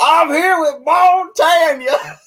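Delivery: shrill, booming, very loud, high put-on cowboy accent. Imagining filming a segment, the speaker shows off a cowboy accent. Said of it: "my demo reel for a cowboy accent".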